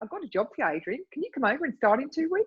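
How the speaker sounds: put-on New Zealand accent. Asked to do the accent, the speaker retells a job offer in a Kiwi accent. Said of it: "That is a very good Kiwi accent".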